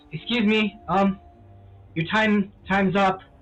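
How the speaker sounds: speaking nervously. Narrating a scene, voicing someone knocking at the door: nervous voice. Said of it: "You hear kind of nervous voice".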